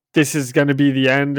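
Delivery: ordinary talk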